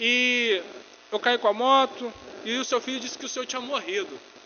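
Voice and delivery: agitated, nervous, high and loud, rushed and blurted.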